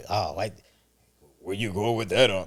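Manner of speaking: put-on mocking, antagonistic tone. Imitating how the other speaker mocks them: imitating a mocking voice. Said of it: "sometimes you would do this too".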